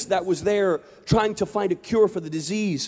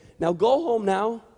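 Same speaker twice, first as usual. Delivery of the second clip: sweet little grandmotherly voice. Retelling a story of a grandma telling her dog: sweet grandmotherly voice. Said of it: "the sweet grandmotherly voice began to talk and say".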